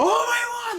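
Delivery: shrill, very high-pitched, enraged, furious shout. Retelling a scene where a character is enraged: imitating an enraged shout. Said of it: "He's just shouting".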